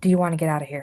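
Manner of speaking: whispering in a put-on voice. Asking a character to leave together, whispering in character. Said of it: "In a whisper".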